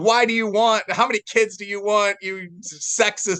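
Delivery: put-on high-pitched screaming. Speaker retelling how a crowd reacted to a remark, retelling people screaming. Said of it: "all these people started screaming at me like".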